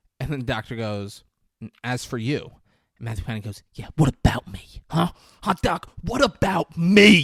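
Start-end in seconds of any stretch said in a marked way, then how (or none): 3.8-7.2 very loud, furious, fuming, rising voice. Retelling how a man answers back to the doctor, mock-fuming. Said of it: "He's fucking fuming".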